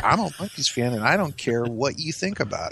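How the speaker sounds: normal talking voice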